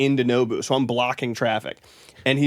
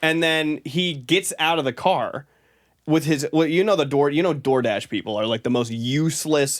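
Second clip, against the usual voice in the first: plain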